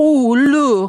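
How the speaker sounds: put-on very high, shrill, very loud Italian-accented exclamation. Retelling what the speaker's grandmother said while they watched TV: grandmother's Italian accent. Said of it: "in her Italian accent".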